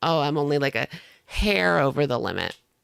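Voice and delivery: scornful, derisive, mocking make-believe voice. Mocking the vlogger's excuse about her weight: imitating the vlogger. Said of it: "She wanted to pretend like".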